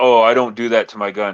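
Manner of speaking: normal talking voice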